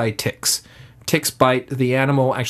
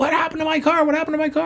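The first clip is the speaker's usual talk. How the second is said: very high, rapid, frantic panicked freaking out. Retelling how a man's grandmother found her car hit, imitating a panicked grandmother. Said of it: "his grandmother just came out freaking out".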